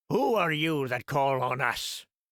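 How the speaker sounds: gruff, rough, challenging tone. A narrator reads one of a band of Knooks confronting a visitor, in a gruff voice. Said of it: "demanded one in a gruff voice".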